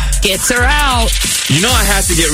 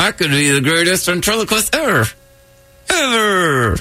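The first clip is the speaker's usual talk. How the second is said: higher, creepy, doll-like ventriloquist voice; 4 semitones higher than usual. Practicing ventriloquism while chatting with others, in a creepy doll-like ventriloquist voice. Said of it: "you sound like if Annabelle could talk".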